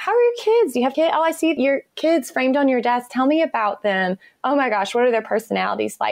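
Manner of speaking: eager, gushing, excited speech.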